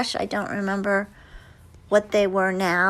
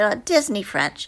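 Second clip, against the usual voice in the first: normal talking voice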